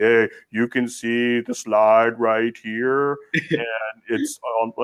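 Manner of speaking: boring, flat, dull, droning monotone doctor voice. Speaker mocking how boring doctors present slides, boring monotone doctor voice. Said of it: "boring type doctors who just are monotone".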